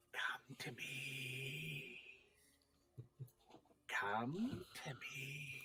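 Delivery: very slow, drawn-out, hushed, dusky wraith whisper. Describing the voice that calls everyone upstairs, in a whispery wraith voice. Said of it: "that whispery, dusk wraithy voice".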